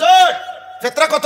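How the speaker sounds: loud high-pitched shout.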